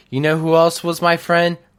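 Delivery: acted mocking wrestler-style voice. Imagining a wrestler turning villain and taunting: sarcastic Riddle impression. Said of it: "sarcastically saying".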